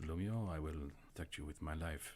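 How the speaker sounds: hushed half-whispered voice. A character half-whispers to a companion while walking out with her: half-whispering. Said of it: "kind of like whispers to you".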